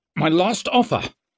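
sharp angry snap, very high pitched. Narrator reads a character's line to Jappo: snapped angrily. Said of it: "he snapped angrily".

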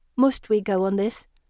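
ordinary delivery

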